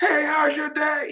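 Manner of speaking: very high, drawn-out yell. Showing how talking to a person in a club sounds: shouting over club music. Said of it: "it sounds like you're aggressive 'cause you can't whisper".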